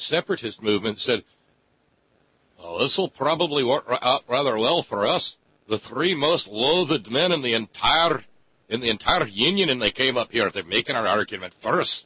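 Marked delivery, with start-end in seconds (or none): 2.6-12.0 put-on Scottish accent, poorly done. Retelling what the separatist movement's leader said, in a bad Scots impression. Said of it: "My bad Scots impression".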